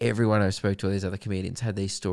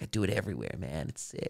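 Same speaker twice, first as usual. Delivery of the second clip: soft, easy, laid-back voice. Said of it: "You do a really good Steve-O voice".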